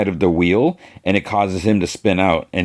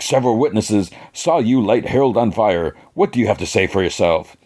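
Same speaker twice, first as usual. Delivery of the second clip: ordinary talk, nothing marked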